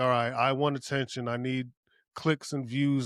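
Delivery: ordinary delivery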